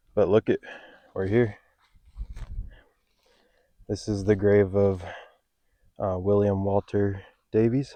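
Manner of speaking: a little winded, out of breath. Speaker arriving at a grave after a long walk, winded, out of breath. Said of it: "I'm a little winded".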